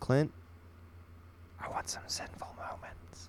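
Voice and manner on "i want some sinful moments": secretive, very quiet, breathy whisper. Admitting a craving she can't say out loud, whispered. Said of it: "I gotta whisper it".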